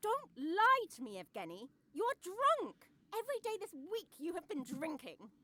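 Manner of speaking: overwrought. Accusing her husband of drinking all week: hysterical. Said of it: "this hysteria".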